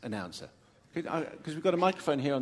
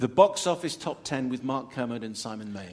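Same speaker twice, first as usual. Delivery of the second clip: ordinary delivery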